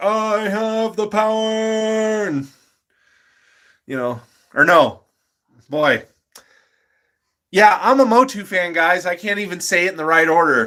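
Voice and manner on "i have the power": the word "power" stretched out and pitched high. Showing a Prince Adam figure and quoting him: Prince Adam voice. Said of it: "Got Prince Adam like".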